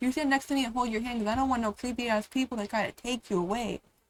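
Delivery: plain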